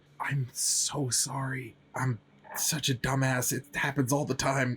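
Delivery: voiced stage whisper in a character voice. Yibs sidles up to Allure during a game scene, Yibs half-whispering. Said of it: "just whisper".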